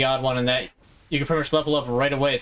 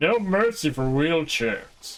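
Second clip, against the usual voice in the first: slow, drawn-out put-on cartoon voice; 3 semitones higher than usual. Giving a hoped-for line the way it's best said, in Plankton voice. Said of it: "Best said with the voice of Plankton".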